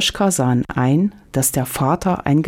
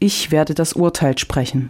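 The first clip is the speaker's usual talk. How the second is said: plain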